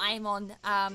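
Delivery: plain reading voice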